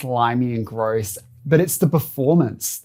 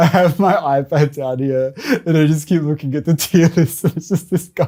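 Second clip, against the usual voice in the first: still laughing while talking; 4 semitones higher, 3 dB louder than usual. Speaker looking at a tier list on an ipad, laughing while talking. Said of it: "I'm still laughing at the burger".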